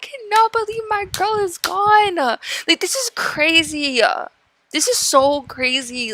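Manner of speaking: tearful, on the verge of tears, very high, swooping. Reacting to news that someone from childhood is gone: on the verge of tears. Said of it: "I'm, like, literally about to cry".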